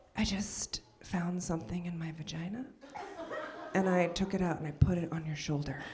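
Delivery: soft, low, hushed half-whisper. Telling a story about cuddling with their daughter, imitating a half-whisper. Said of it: "she whispers in my ear".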